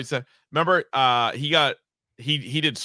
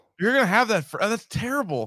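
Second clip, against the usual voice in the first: put-on disappointed tone, higher pitch; 7 semitones higher than usual. Retelling what was said to a friend showing a lip tattoo: imitating own disappointed tone. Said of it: "with the disappointment only, like, a father could have".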